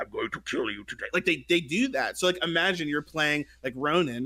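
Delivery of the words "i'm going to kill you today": low, hushed villain voice. Describing a Paladins skin, imitating its Darth Vader-looking character's voice. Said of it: "talks like that".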